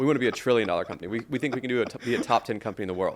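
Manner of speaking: mock dead serious, completely earnest, no joking. Retelling a co-founder's remark in a pricing debate: imitating someone dead serious. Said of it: "and he said it dead serious".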